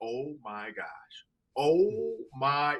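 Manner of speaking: mock dazed, awestruck wonder, very slow, rising, drawn out. Retelling a player's reaction to chains put on him: imitating Kirk Cousins in awe. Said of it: "he's in awe of".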